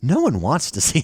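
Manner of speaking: put-on smug, condescending, talking-down voice. Mocking people with Starfield derangement syndrome, in a mock condescending voice. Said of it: "the voice and tone of someone with Starfield derangement syndrome".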